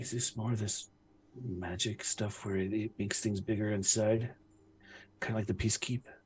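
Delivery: very soft, hushed, very quiet half-whisper. In character, half-whispering a question to Rilo. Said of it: "I'm whispering to you".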